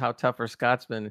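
ordinary talk, nothing marked

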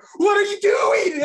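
very loud, high-pitched, terrified shout. Retelling how a woman rips off a man's hat; imitating a terrified man. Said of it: "you can hear the terror in his voice go".

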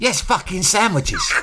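high-pitched, impatient, fed-up, intolerant snap. Retelling the mum's reply to a silly question: imitating an intolerant mum. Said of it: "my mum's very intolerant".

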